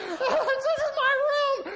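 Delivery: high, loud, slow scream.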